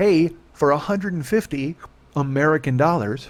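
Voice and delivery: slow delivery with a stifled yawn. Quoting an email received yesterday: stifling a yawn. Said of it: "Trying not to yawn".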